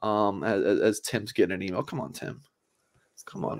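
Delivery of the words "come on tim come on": playful teasing, quieter and faster. Host teasing his co-host who is getting an email during the show, teasing. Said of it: "I'm teasing you".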